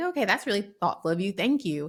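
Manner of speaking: ordinary talk, nothing marked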